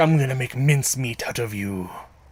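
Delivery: threatening, menacing villain voice. Imitating a line from the episode: threatening Eggman voice. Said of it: "the most threatening he's ever sounded. When he's like".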